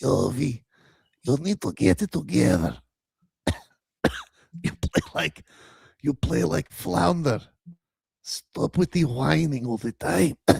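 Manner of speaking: very deep, low, rough, raspy smoker's voice. The grandmother character speaks to Yovi, in a smoker's voice. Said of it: "the grandmother definitely has a smoker's voice".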